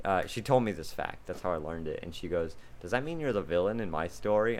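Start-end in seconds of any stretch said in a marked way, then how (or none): none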